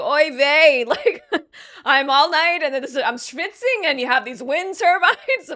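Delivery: put-on whiny, complaining voice. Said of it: "imagining this guy being like".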